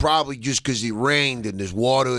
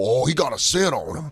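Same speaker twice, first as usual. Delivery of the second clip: thick, broad Southern Georgia accent, laid on. Imagining owning a beagle and voicing its sniffing, in a deep Georgia accent. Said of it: "I would only do a deep Georgia accent".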